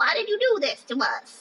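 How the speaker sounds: very high, squeaky, swooping creature voice. Voicing irritated skin that complains about makeup: voice of talking skin. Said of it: "That's how it talks".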